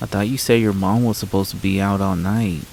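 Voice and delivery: ordinary talk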